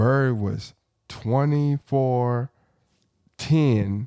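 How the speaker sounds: slow, drawn-out delivery. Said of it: "let me say it slow".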